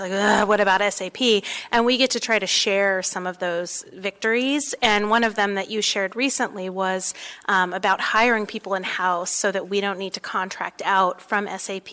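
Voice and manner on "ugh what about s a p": disgruntled, grumbly, complaining voice. Retelling what community council members ask: imitating a grumbly voice. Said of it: "sort of in a grumbly voice".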